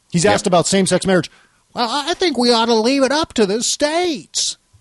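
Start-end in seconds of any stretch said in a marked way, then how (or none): 1.9-4.5 weird, plaintive put-on voice. Quoting Ron Paul's answer on same-sex marriage: Ron Paul impression. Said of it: "That's a good impression. In his weird plaintive voice".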